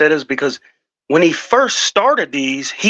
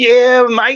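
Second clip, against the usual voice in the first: loud, high, belted outback Australian accent; 7 semitones higher, 5 dB louder than usual. Suggesting a voice for the guy who comes in: Crocodile Dundee voice. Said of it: "Give him a crocodile Dundee voice".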